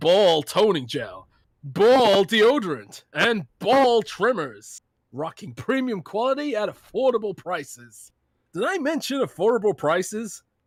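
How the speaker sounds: put-on American accent with a salesy, pitchy delivery. Host doing the sponsor ad read on request, in an american accent. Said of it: "do it in your American accent".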